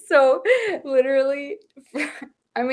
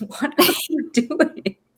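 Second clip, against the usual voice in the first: put-on puzzled tone, higher pitch; 2 semitones higher than usual. Retelling Sam walking up during the chicken chat: imitating Sam's puzzled question. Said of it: "Sam will come around and be like".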